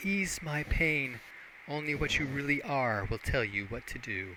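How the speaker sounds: weak, soft, faint half-whisper. Game narrator voicing a nymph answering the player's offer of help, half-whispering. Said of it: "She whispers up to you".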